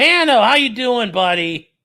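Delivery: high, loud, bright, excited voice.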